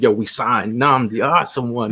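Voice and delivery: normal talking voice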